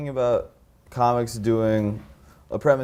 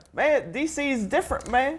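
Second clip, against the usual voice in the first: comedian voice, pitched way up, stretched slow; 14 semitones higher than usual. Retelling a friend's comedy bit: Dave Chappelle impression. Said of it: "he was doing a very good Chappelle impression".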